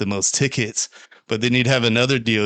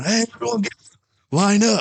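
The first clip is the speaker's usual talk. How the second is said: shrill, very high, pitched-up screaming; 12 semitones higher than usual. Retelling how a guy lit up skinny dippers with a flashlight, retelling a scream. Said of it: "He's screaming".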